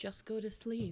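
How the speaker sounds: very quiet, very calm, hushed voice. A game narrator voices a sudden voice speaking to the players, very calm. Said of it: "you just suddenly hear this this very calm voice telling you".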